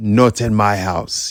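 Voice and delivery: rough, rasping, put-on Congolese accent. Explaining a basketball example and imitating Dikembe Mutombo's catchphrase. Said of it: "with a Congo accent".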